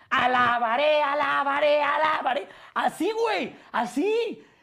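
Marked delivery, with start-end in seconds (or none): 0.1-2.4 sudden, high, loud shouting outburst. Retelling how someone at a table started shouting: imitating someone shouting. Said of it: "a gritar".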